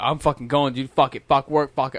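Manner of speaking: ordinary talk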